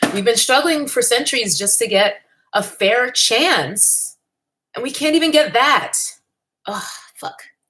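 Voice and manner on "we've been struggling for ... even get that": choked-up, pitched up, fighting back tears. Speaking to viewers with tissues at hand, holding back tears. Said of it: "I am not gonna cry on the internet".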